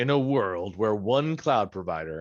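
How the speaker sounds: film-trailer narrator style movie announcer voice. Opening a course module in a movie announcer voice. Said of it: "with that movie announcer voice".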